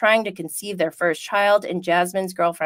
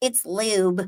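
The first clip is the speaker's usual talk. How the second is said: put-on light touch of a Kentucky accent; 3 dB quieter than usual. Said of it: "with her little Kentucky accent".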